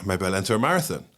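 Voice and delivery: ordinary delivery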